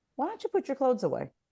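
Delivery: kind, gentle, soft-spoken tone. Suggesting a kinder way to ask someone to put clothes away, kind tone. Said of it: "How kind was that?".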